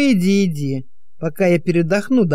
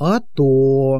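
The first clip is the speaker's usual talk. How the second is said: knowing, meaningful hmph-like grunt; 3 semitones lower than usual. Grigory answers the question "what?" with a meaningful hmph. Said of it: "хмыкнул со значением Григорий".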